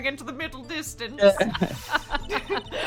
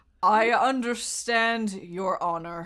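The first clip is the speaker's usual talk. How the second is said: put-on British accent, slightly slurred; 6 semitones lower than usual. Voicing Edgeworth in a courtroom scene: Edgeworth voice with a slight slur. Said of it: "Edgeworth has, like, a slight slur".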